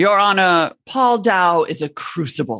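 slight, light put-on English accent. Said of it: "I'll do like the [name] sort of slightly English accent version".

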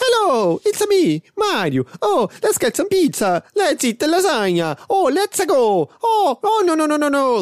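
very high, goofy, drawn-out cartoon hero voice. Showing what a whole film of the accent would sound like: Mario voice. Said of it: "você é muito bom de fazer voz do Mario".

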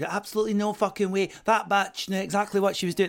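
put-on Glasgow accent. Retelling how a girl disagreed, in a Glasgow accent. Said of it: "the accent is on point".

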